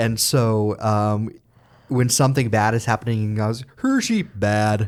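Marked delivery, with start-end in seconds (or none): 3.8-4.9 cartoon puppet Swedish cook voice. Imitating a goat character done as a Muppet: Swedish Chef voice. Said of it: "Doctor Dillamond is Swedish chef".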